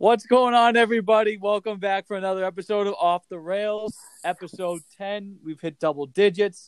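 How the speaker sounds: bright, smiling tone. Opening a podcast episode, greeting the listeners: smiling while talking. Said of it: "sounded like you had a smile on your face".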